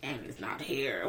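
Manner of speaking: low, slow, quiet creepy voice.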